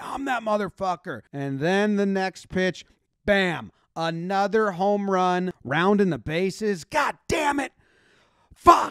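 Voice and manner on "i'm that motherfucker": acted-out, chest-thumping boast, kept mild, screaming. Retelling a player screaming at everybody after a home run: imitating a player screaming. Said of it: "just screaming at everybody".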